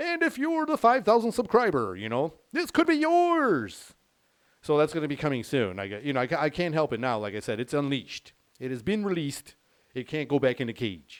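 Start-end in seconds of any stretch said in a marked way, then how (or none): 0.0-3.9 very high, swooping creepy game-show host voice. Showing how future subscriber giveaways will be announced: creepy game show host voice. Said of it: "the game show host creepy guy".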